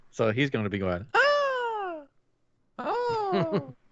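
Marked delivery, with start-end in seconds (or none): 1.1-3.6 very high, far-off sounding yelps. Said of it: "That's what Toad does".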